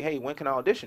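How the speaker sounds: usual speaking voice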